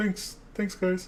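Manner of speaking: goofy, weird, silly voice, very high. Host thanking listeners for a tweet congratulating episode fifty, in a weird silly voice. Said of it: "In my weird voice, I don't know why I'm saying it like that".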